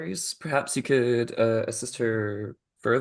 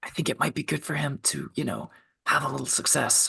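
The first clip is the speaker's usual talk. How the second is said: hushed, breath-only whisper; 4 dB quieter than usual. Privately addressing two fellow party members: whispering. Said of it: "whi- whispering to".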